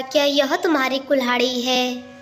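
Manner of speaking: ordinary delivery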